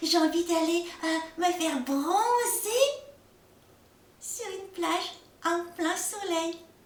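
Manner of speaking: cartoon snowman character voice. Speaking as the snowman character, in a snowman character voice. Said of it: "je m'appelle [name], je suis un bonhomme de neige".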